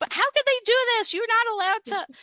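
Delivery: put-on very high, shrill, loud kids' shouting. Describing how kids react in a Ten Commandments lesson, imitating kids shouting. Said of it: "the kids will immediately be shouting like".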